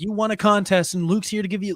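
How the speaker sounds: ordinary talk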